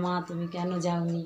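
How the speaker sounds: ordinary delivery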